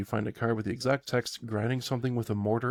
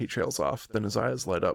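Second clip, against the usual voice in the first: ordinary talk, nothing marked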